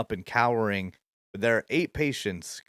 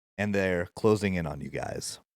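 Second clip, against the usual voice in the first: ordinary talk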